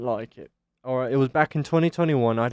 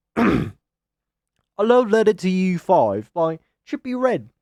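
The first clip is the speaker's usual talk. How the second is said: put-on British accent, loud, slow and deliberate; 7 semitones higher, 5 dB louder than usual. Announcing the next album review, speaking in a british accent. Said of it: "I need to speak in the British accent".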